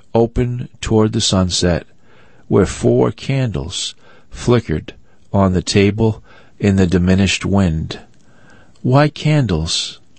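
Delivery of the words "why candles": high, protesting, objecting, pushing-back tone. A narrator reads a young woman on a candlelit porch, objecting. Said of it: "objected Daisy, frowning".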